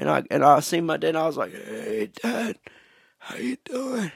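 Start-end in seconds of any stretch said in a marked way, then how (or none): 1.5-4.1 slow, strained, barely-there whisper, voice nearly gone. Retelling greeting dad the morning after a sore throat: imitating barely being able to talk. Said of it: "I could barely talk".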